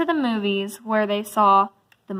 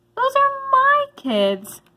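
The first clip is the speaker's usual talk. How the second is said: scratchy voice, pitched way up. Narrating a story, Miss Nelson's line on seeing her class, scratchy voice. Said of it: "she said in a scratchy voice".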